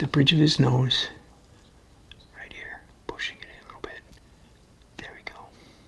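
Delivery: speaking in a whisper. Painting a small face up close and talking, whispering. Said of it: "Why are we whispering?".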